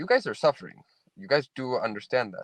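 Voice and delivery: ordinary talk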